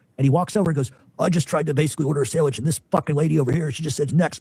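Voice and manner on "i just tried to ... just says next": normal talking voice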